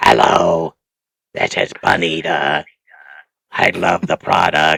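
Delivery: worn, croaky, slow, rough, creaky smoker's rasp. Imitating a caller on a shopping channel: Pall Mall voice. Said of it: "the one with the Pall Mall voice".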